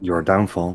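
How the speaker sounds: mumbled, as an aside. Playing a character who mumbles at someone leaving: mumbled under the breath. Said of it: "James is gonna mumble under his breath".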